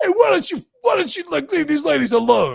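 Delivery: very high, loud, animated, swooping shout. Retelling how someone confronted a man harassing deli workers: imitating someone yelling. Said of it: "And, like, yells at him".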